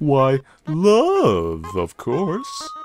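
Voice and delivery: cheery, folksy, sing-song, slow flower voice, "love" stretched out. Voicing the talking flower's lines from the game, talking flower voice. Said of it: "I'm [name]! [name] the flower! / Howdy! I'm [name]! [name] the flower! You're new to the underground, aren't ya? Golly".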